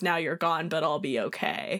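ordinary talk

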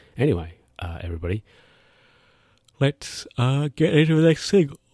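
speaking through a yawn. Hosting a show and moving on to the next segment, yawning while talking. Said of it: "Why am I yawning?".

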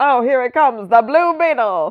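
put-on high, old-fashioned, old-timey radio announcer voice. Introducing the 1940s superhero the Blue Beetle, old-timey voice. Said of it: "That's my one old-timey voice".

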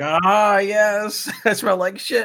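maniacal, very high, very slow, drawn-out tone. Imitating a game character known for her laugh: imitating a maniacal character. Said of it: "She's fucking maniacal about it".

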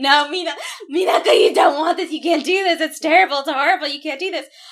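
high, loud screaming sobs, flipping out. Retelling an episode where Usagi grabs Minako, imitating Usagi screaming and crying. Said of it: "starts screaming and crying".

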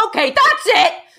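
furious, loud, high shout. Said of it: "While I shout".

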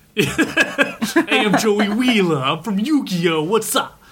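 put-on thick Jersey accent, high, slow and drawling. Joking about dubbed characters with thick accents: Joey Wheeler voice. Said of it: "a thick Jersey accent".

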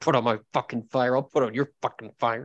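put-on angry, ranting voice. Acting out a character stomping towards the place: imitating an angry stomping Anton. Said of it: "Anton's already stomping towards the place".

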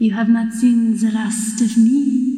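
weird, strange, floaty creature voice. A narrator voices a snowman whose grinning head speaks; weird floaty voice. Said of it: "This like weird floaty voice comes out of it".

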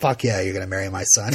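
play-acted contemptuous, sneering, gloating voice. Retelling a wedding scene, imitating Lionel sneering. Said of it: "this little bit of a sneer on his face".

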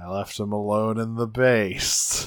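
glum, crestfallen, very dejected, downcast delivery. Recapping a scene, the speaker gives Primal's reply: imitating Primal sounding dejected. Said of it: "in a very dejected voice".

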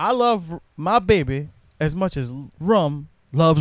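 normal talking voice

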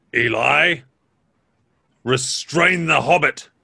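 growling devil voice. Narrating a game scene, voicing the devil giving Eli an order; growling devil. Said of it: "the devil growls".

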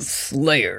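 put-on game announcer voice. Answering a joke about game voices: Halo announcer voice. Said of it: "same voice as the Halo announcer".

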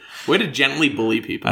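normal talking voice

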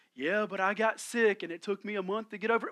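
gloomy woe-is-me moan like a glum donkey. Acting out a talk with a gloomy Eeyore: Eeyore voice. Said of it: "y'all remember Eeyore from Winnie the Pooh?".

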